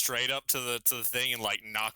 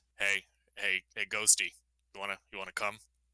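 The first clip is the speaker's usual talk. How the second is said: hushed, whispered speech; 4 semitones lower than usual. A tabletop player has their character call out to a ghost while coming down, whispering. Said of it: "he kind of whispers".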